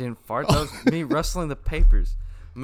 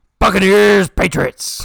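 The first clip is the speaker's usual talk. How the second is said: very loud, rough, high full-volume shout; 5 semitones higher, 9 dB louder than usual. Announcing the next football matchup, in a very loud shout. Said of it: "that hurt my ear".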